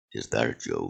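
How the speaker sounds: very low, put-on superhero voice. Retelling how he answered somebody while getting on the boat, in his Batman voice. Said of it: "Like in his Batman voice".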